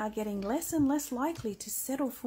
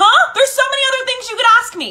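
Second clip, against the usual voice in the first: very high-pitched, very loud, shrill yelling; 12 semitones higher, 18 dB louder than usual. Complaining to another speaker about a question: yelling. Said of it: "Why are you yelling?".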